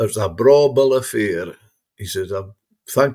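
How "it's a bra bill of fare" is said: put-on very broad, thick Ayrshire accent. Retelling what a man told Jim after the meal, in very broad Ayrshire. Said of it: "in very broad Ayrshire".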